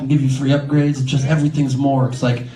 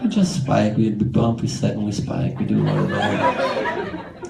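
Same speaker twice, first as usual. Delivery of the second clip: low, sad voice. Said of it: "Why do you sound so sad?".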